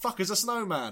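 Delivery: very loud, shrill, high-pitched startled yell. Retelling a story, the speaker acts out one man's outburst, retelling a shout. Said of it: "As one man shouts".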